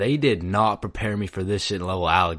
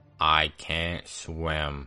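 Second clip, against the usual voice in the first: deadpan, low, flat, expressionless monotone; 4 semitones lower, 3 dB quieter than usual. Retelling Ben's reply while the speaker fights for his life, Ben's monotone voice. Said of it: "he says in the most monotone voice".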